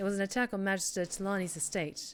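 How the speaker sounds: plain reading voice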